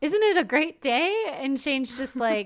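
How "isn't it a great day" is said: put-on bubbly, gushing, high, exuberant excitement. Retelling how Lane greets Shane, mimicking Lane, exuberant and excited. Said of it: "Lane is so like exuberant and excited".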